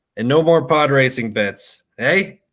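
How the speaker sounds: wry, knowing, sly and amused tone. A woman on a bar stool speaks as he walks into the smoke, smirking. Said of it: "she just smirks and says".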